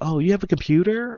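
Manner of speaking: high, rising, surprised voice.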